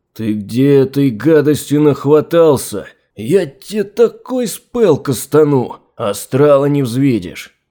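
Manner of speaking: furious, flaring-up, boiling-over angry outburst. The wizard Yefrem turns on Gleb, who mentions casting a spell, boiling over with anger. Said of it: "Вскипел чародей".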